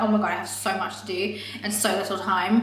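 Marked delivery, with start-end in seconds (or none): none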